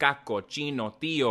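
ordinary talk

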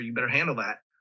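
low, private-sounding whisper. Retelling a quiet warning to the director, imitating own half-whisper. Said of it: "I just whispered to the director".

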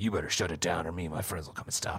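hushed, breathy, quiet superhero voice. Retelling a scene, the speaker quotes a man turning back to a woman: Batman voice. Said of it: "with a very Batman-y voice and is like".

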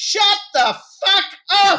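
piercing, very high, loud shout. Retelling how a noisy crowd was silenced at a gig: retelling own yell. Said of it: "I took the microphone and I yelled".

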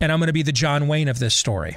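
ordinary delivery

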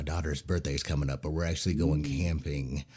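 hushed, quiet, secretive aside. Revealing weekend camping plans as a birthday surprise: saying it quietly. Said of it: "I gotta say it quietly".

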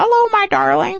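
chirpy pet-bird voice.

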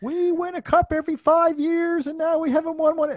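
put-on high whine.

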